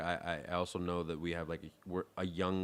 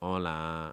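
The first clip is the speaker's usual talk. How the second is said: imitated hola, said flat and nasal. Imitating how people there say hello: flat nasal hola. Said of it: "they say it like".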